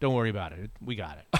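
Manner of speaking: calm, totally certain, reassuring tone. Retelling a phone call after an interview, imitating Mike Holmgren, totally sure. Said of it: "there was absolutely no chance in his voice".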